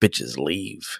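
robotic cop voice with machine-like delivery. Retelling a scene, like the guy in RoboCop. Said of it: "he does like the guy in RoboCop".

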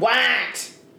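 squawky, duck-like squawk on what. Imitating how her three-year-old says it, squawky duck-like voice. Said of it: "It's the way she says it. ... why are you like squawking at me? ... It's like a duck".

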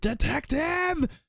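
very high, slow, drawn-out scream.

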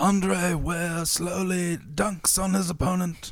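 unhurried wildlife film narrator voice. Narrating like a nature documentary, as suggested: David Attenborough voice. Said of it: "like David Attenborough from Planet Earth?".

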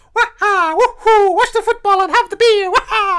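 very high, very loud, shrill cartoon voice, belted. Picturing the game plumber as working class: Mario voice. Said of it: "this idea of Mario being like".

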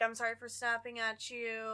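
usual speaking voice

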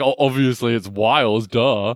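mock condescending, smug know-it-all tone. Mocking how the other speaker just explained a word: mocking a condescending reply. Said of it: "why are you being like".

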